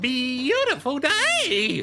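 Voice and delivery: imitated voice crack. Repeating a line someone just said, imitate his voice crack. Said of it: "Like that".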